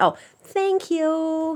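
high voice through the nose. Retelling how she thanks her mother these days, nasal voice. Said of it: "why are you speaking out of your nose?".

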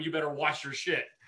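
shouting voice. Retelling a night out, repeating a yell at a man: imitating own past yelling. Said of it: "I was literally yelling at him".

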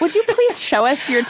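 coy, sheepish, shy and polite, pitched high. Acting out a stranger's request with the other speaker: imitating a coy polite request. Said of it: "he was very coy".

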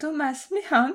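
put-on English accent on a name. A French speaker presenting a film pronounces an English name: English accent. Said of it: "mon accent anglais".

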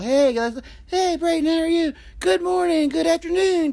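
mock very high-pitched, overly nice friendly tone. Retelling how he usually greets his co-host: imitating own nice greeting. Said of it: "I've always tried to be nice".

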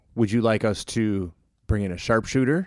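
ordinary talk

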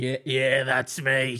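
odd, mangled-sounding voice, slow and drawn out. Imitating Darren Lockyer answering a fan: Darren Lockyer's fucked up voice. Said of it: "'Cause he's got that fucked up voice".

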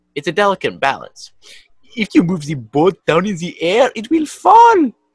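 high, loud, put-on French accent.

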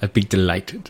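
put-on Welsh accent. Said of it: "Can't even do the accent very well".

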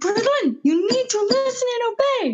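very high, slow, furious, scolding yell. A mom retelling yelling at Braylon, re-enacting her mad yelling. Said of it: "I'm yelling. I'm just so mad".

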